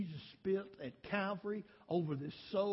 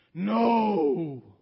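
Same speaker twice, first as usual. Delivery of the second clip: very loud, booming, drawn-out masculine demon voice; 12 dB louder than usual. Retelling what came out of a woman at a revival: imitating a masculine voice. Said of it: "a masculine voice came out of her".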